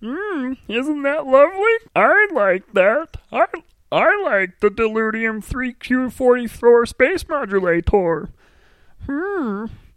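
very high, slow, drawn-out alien voice. Showing a best impression: Marvin the Martian voice. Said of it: "Marvin the Martian, which is pretty much my best impression".

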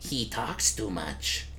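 soft, slow, drawn-out hissed words. Right after stabbing a foe, the bug empress speaks, hissing. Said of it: "Lucretia hissed".

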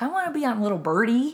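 offhand, casual delivery. Retelling what a friend asked after a show: imitating Brendan. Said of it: "That's my impression".

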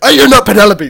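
shrill, high, blaring, booming shout. Retelling a tall man shouting right in a girl's ear: imitating a loud shout. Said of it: "loud as fuck".

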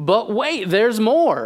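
late-night infomercial pitchman sales voice. A speaker quotes the classic TV sales line in a late-night infomercial voice. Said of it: "he puts on his best late night infomercial voice".

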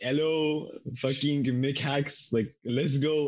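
put-on thick, heavy French accent, very slow and drawn out. Retelling a sponsor's video greeting at McHacks, in a heavy French accent. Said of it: "very heavy French accent was like".

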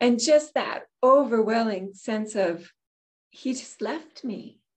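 voice getting choked up. Recalling the moment he left the nest, telling the listener: choked up. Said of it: "I'm getting choked up".

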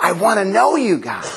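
put-on yearning voice, aching and full of longing. Preaching about prayer, acting out a prayer to god, imitating a yearning plea. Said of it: "the hunger in Paul's voice".

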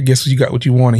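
ordinary talk

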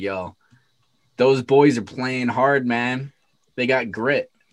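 plain

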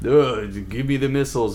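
put-on Arabic-accented voice.

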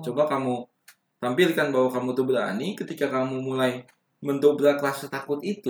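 ordinary talk

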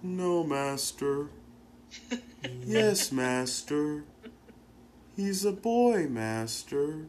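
mock very slow, deeply regretful, high voice. Imitating twins in a movie answering their master: mock-regretful tone. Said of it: "everything they say is said with such regret to it".

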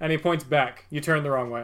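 plain

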